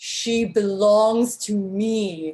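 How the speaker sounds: ominous, deep, dark, distant cry, me drawn out. Narrating a scene, a voice from beyond the mountains cries out: deep, dark voice. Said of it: "A deep, dark voice from beyond the mountains cries out".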